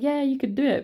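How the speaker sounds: high-pitched, encouraging cheer.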